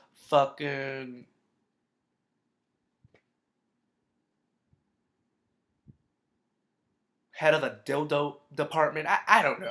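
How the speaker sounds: voice cracking. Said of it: "Why is my voice cracking?".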